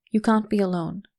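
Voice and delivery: ordinary talk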